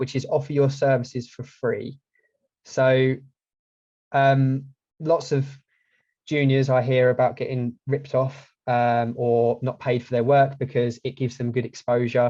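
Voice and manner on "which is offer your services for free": usual speaking voice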